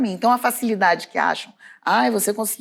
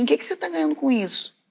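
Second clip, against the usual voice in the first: small nagging voice, pitched up; 6 semitones higher, 4 dB quieter than usual. Recalling hanging up a call, then hearing a voice inside: little nagging inner voice. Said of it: "aí veio uma vozinha assim".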